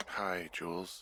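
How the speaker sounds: drowsy, worn-out, sleepy murmur. Picking up the radio and greeting the caller, in a tired voice. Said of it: "you sound tired".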